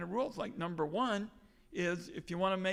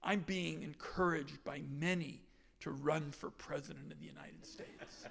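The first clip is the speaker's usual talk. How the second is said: mock very grave, almost serious, hushed solemn delivery; 3 semitones lower, 6 dB quieter than usual. Quoting a section of a political message; mock-grave serious tone. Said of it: "in a very grave, almost serious tone".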